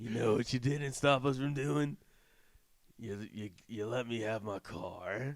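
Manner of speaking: low, very slow growl. Imitating Vin Diesel's movie character: Vin Diesel impression. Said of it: "it's gonna sound like Triple H when I do this".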